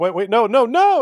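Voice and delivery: high, loud, panicked yelling.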